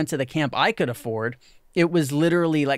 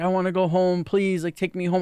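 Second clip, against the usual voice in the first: mock crying voice, tearful, as if begging; 3 semitones higher than usual. Retelling a girl at camp calling her parent: imitating a crying girl.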